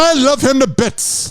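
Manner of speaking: bad British accent. Repeat a phrase you just called a very British way of saying things, bad British accent. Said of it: "That was not a British accent".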